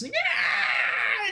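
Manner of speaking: shrill, very high, startled fright scream. Voicing a kobold startled when the door is kicked open: kobold screaming in fright. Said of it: "and then he then screams".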